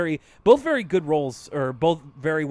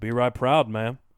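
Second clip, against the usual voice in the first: put-on Old West accent, lower in pitch; 3 semitones lower than usual. Imitating a cartoon character's line: imitating Arthur's Old West accent. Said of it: "sounds a little bit like he's putting on his Hank Hill voice".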